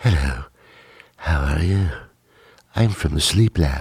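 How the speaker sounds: airy, soothing, soft, breathy woman's voice. Retelling a phone call from a woman at the sleep lab, imitating a breathy woman's voice. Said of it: "from this woman with a very breathy voice".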